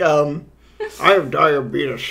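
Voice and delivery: put-on commercial announcer voice. Describing the man from a diabetes commercial, imitating the diabetes commercial guy. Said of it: "He sounds like".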